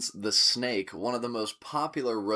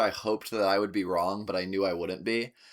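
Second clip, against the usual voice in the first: ordinary talk, nothing marked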